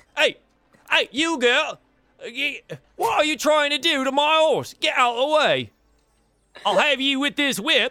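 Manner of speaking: very high, furious, angry bellow. Voicing a cart driver who threatens a girl near his horse: angry cart driver. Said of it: "Driver says".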